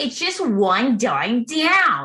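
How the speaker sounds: put-on over-the-top New England accent, very slow, drawn out. Imitating a lady in a car dealership radio ad: exaggerated new england accent. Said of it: "the most exaggerated New England accent".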